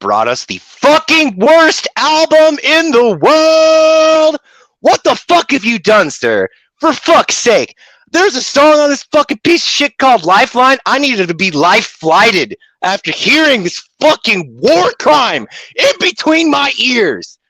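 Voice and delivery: very high, furious yelling rant. Reviewing an album he hates, an angry yelling rant. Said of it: "I'm yelling so much my lips are going numb".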